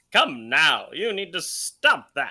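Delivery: over-the-top, loud, swooping forties newsreel announcer voice. Showing the voice they'll use, over-the-top 1940s news announcer voice. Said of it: "that over the top, like nineteen forties, fifties, like a news announcer voice that I'll use".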